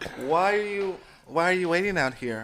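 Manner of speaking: soft, hushed put-on celebrity-style voice. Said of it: "in like a [name] type voice".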